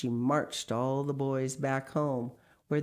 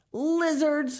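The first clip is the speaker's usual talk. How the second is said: scornful and contemptuous, very high and loud; 13 semitones higher, 6 dB louder than usual. Narrator reads a tied-up boy's words to the bullies, scornful. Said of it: "Patrick Edward said scornfully".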